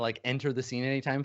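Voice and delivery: normal talking voice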